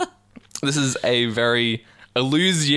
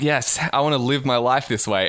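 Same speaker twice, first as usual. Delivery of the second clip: usual speaking voice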